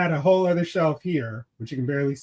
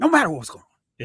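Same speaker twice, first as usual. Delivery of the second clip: put-on one-emotion actor voice, higher pitch; 3 semitones higher than usual. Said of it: "couldn't go without talking like this".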